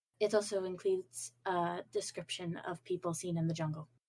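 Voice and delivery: discreet, hushed, quiet, confidential delivery. Voicing a character telling Sasha something so eavesdroppers won't hear: speaking quietly. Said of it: "Just kinda quietly goes".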